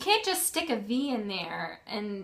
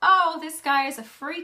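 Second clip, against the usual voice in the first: high, loud, excited exclaiming. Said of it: "they were like".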